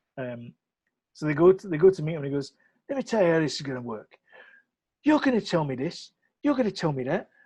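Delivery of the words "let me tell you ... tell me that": swooping put-on Cockney accent, bossy tough-guy talk. Retelling a film scene where people go to meet a man: cockney accent impression. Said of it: "That's a Cockney accent".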